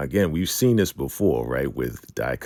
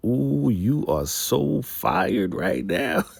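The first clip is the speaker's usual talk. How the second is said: play-acted high, jeering, gloating taunt through laughter; 7 semitones higher than usual. Retelling a story, the sheriff taunts someone about being fired: imitating laughing taunt. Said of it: "He's laughing".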